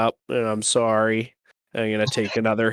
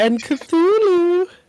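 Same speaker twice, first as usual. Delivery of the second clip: shrill, very high-pitched, loud squeak; 5 dB louder than usual. Saying a name in a deliberately high-pitched voice. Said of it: "in a high pitched voice".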